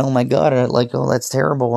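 put-on tearful breakdown. Retelling how another professor nearly broke down, imitating near-tearful breakdown. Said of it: "nearly cried, like broke down and went".

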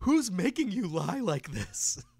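animated cartoon voice, high and loud. Describing a scene, the speaker voices a character in a cartoon character voice. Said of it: "I'm always surprised by your voice work".

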